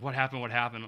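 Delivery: ordinary delivery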